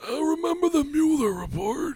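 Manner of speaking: very high, slow, put-on old smoker voice. Joking about talking about the news in twenty years: put-on older smoker voice. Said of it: "You're gonna sound like that in twenty years?".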